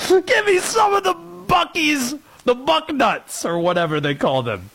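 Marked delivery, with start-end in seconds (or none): 0.3-3.4 put-on high, laughing evil villain voice with European accent. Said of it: "All your European accents sound evil".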